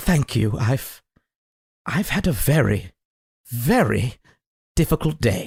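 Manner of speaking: tearful character voice. Voicing Dwayne thanking someone who helped him, sincere tearful thanks. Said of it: "He actually sincerely says".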